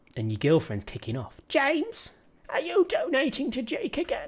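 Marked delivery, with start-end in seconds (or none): 1.4-4.2 very high, awful put-on female voice. Acting out a supporter's girlfriend asking about his donations, bad impression of a woman. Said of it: "that was a really bad impression of a woman".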